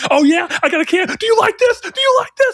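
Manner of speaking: manic, unhinged, very high, climbing in pitch. Retelling a friend's outburst in game chat: imitating Chris losing his mind. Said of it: "losing his fucking mind".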